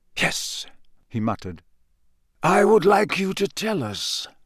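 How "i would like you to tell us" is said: mild, kindly, gentle, slightly pitched-up. Kneeling face to face with a man who barely responds, he speaks softly. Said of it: "said Dumbledore softly".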